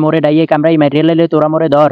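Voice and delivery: plain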